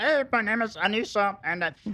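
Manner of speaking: silly, very high-pitched voice. Doing an impression of Anissa for the others: Anissa impression. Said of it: "You wanna hear my impression of Anissa?".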